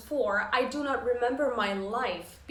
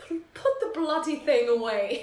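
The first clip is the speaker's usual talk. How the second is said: put-on posh upper-crust British accent; 4 semitones higher, 4 dB louder than usual. Retelling his reply when asked for feedback, in a posh British accent. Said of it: "in his like you know posh British accent".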